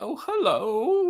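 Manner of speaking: creepy, strange, very high voice, "hello" drawn out. Retelling a movie's opening scene, voicing the stranger at the house, creepy strange voice. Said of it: "He's being really creepy".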